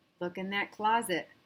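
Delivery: ordinary delivery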